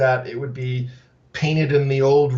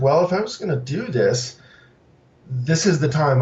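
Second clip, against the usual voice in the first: ordinary talk, nothing marked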